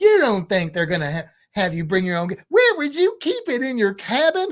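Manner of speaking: light, sing-song touch of southern drawl. Quoting what a woman said, with a slight southern drawl. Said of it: "a little bit of a southern drawl".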